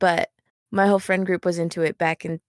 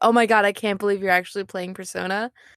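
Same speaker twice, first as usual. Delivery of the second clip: ordinary talk, nothing marked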